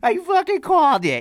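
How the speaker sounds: put-on squeaky, high, drawn-out prepubescent Jersey boy voice. Showing how the other speaker imitates him: prepubescent jersey boy voice. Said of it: "I don't sound like some, like, prepubescent, like, Jersey boy".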